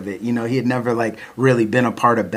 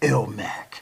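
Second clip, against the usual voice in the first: acted, purposeful, serious tone; 7 dB quieter than usual. Retelling how a caller opened a phone call: imitating a tone on a mission. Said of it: "a mission on his tone".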